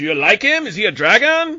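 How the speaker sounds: very loud, shrill, high-pitched voice. Imitating how she asked the question, doing her voice. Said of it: "Thank you for doing it in the voice".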